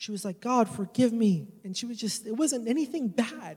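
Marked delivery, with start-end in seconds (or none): 0.4-1.5 put-on crying, tearful voice. Retelling someone praying in a circle: imitating someone crying while praying. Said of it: "she began to cry".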